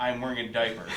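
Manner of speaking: plain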